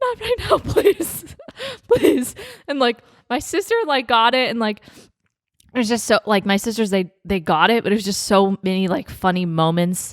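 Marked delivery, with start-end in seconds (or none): 0.0-2.3 put-on, very high, tearful, crying, pleading voice. Retelling answering her mom's offer of a gift, imitating own tearful pleading. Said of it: "waiting for me to stop crying".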